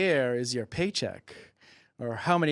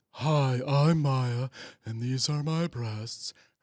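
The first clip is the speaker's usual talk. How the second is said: very breasty, slow voice. Imitating Maya introducing herself: imitating Maya's breasty voice. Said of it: "Her voice is very breasty to me".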